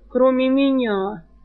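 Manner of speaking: moaned, groaning voice. Narrator reads a character again playing the dying man, replying to a companion: moaned. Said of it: "простонал Жар".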